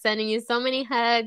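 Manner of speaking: ordinary talk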